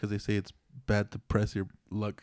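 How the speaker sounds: very low, slow, drawn-out, hushed delivery. Answering their own riddle for a listener, said slowly. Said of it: "the way you kind of said it is like slow".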